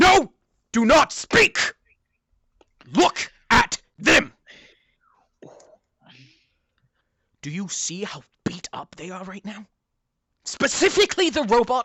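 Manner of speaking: angry, scolding voice. Voicing a character who knocked a player down, angrily scolding. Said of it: "looks at you and he says".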